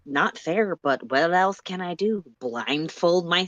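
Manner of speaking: ordinary delivery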